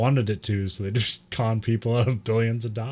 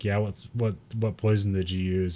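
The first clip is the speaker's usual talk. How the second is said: put-on deadpan delivery, quieter; 3 semitones lower, 5 dB quieter than usual. Retelling Cho interviewing a suspect: imitating Cho's deadpan. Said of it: "Cho's just deadpanning".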